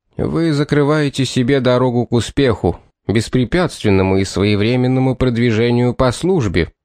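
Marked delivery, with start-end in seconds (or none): none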